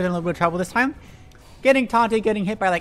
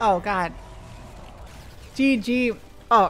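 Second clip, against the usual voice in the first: very slow, whispery, breathy sputtering and choking; 5 dB quieter than usual. Commentating a match after getting popcorn in the throat: choking on popcorn. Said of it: "I got popcorn in my throat".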